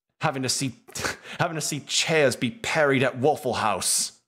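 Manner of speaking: deliberately assumed, put-on British accent. Ranting about how awful the people they protect are, in a british accent. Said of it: "I say in a British accent".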